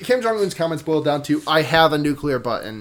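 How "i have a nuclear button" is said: ordinary talk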